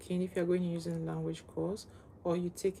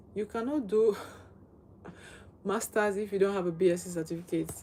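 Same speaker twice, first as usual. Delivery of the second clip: talking with laughter breaking in, laughing through words; 4 dB louder than usual. Answering a question someone asked, the speaker is laughing while talking. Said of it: "I'm laughing, but it's funny".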